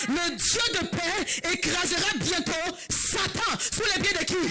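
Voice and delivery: shouting slowly while crying.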